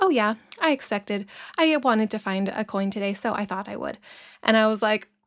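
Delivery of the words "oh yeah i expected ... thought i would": ordinary talk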